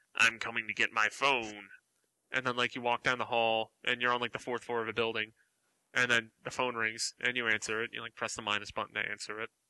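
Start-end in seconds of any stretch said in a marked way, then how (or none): 0.2-1.7 sinister, creepy, spooky voice. Describing a phone call in a game, the speaker voices the caller: creepy voice. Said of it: "like a creepy voice".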